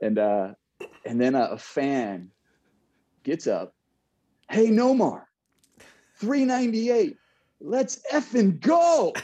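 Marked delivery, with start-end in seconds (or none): 4.5-9.1 loud, very high, dead-serious, angry shout. Retelling a fan at the ballpark yelling at him: imitating a pissed-off fan. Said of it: "dead serious, like, pissed off".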